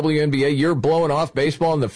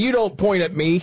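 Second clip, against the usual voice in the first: usual speaking voice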